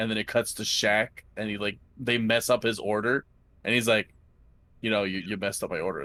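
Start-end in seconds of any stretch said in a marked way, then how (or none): 4.8-6.0 put-on flat monotone voice, lower. Retelling a commercial where Shaq's order is messed up: Shaq monotone voice. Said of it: "monotone the whole time".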